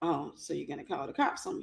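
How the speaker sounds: calm, relaxed, menacing near-whisper. Retelling a confrontation, the speaker quotes the man's reply to calling the cops: imitating calm, scary tone. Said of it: "in the scariest, but most calm, relaxed way".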